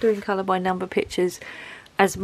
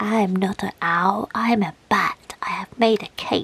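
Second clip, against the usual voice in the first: playful funny put-on voice. Giving a bat a voice while showing it off, silly character voice. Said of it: "Don't know where that voice came from".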